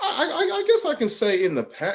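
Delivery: very high, sing-song, swooping, halting, stammering voice. Answering a question about whether real life is reflected in the poem, high voice. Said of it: "In a high voice?".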